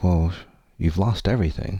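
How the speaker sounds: ordinary delivery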